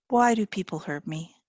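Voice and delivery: tiny, small, quiet voice. Reading a story where a frightened young child asks a question: tiny voice. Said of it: "She speaks in a tiny voice".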